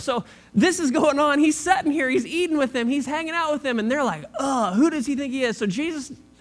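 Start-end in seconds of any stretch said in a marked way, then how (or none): 4.4-5.6 put-on voice dripping with disgust. Retelling the complaint of the Pharisees and scribes: imitating disgusted Pharisees. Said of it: "disgust in their voice".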